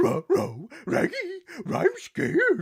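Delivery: very high cartoon dog voice, slow, swooping pitch. Retelling a first try at an impression: Scooby-Doo voice. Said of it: "found out then I could do Scooby-Doo".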